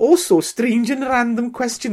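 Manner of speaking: put-on Welsh accent. Asking a question while attempting Rhiannon's accent: Rhiannon's Welsh accent. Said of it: "That's Welsh".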